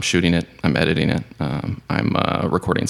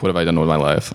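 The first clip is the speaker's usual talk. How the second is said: normal talking voice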